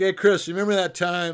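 high-pitched, loud, teasing voice. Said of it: "He'll say".

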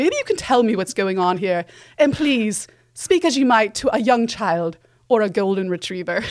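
put-on British accent, executive voice. Retelling a movie scene, quoting the top executive: British accent. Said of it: "kind of British accent".

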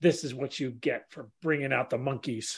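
soft, menacing, threatening half-whisper. Voicing a character strangling someone with a garrote: half-whispering a threat. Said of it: "I whisper in his ear".

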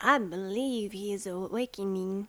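put-on American accent. Asked at an audition to give a line in an American accent: American accent. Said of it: "Let's hear your American accents".

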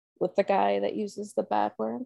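mock flat, matter-of-fact tone. Retelling a daughter's remark about the podcast: imitating deadpan delivery. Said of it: "she deadpan".

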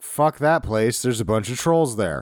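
ordinary talk, nothing marked

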